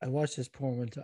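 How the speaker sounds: voice dropped right down. Starting a story while being recorded on a microphone, with a lowered voice. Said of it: "lowers his voice down".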